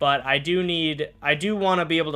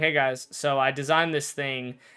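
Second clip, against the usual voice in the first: ordinary talk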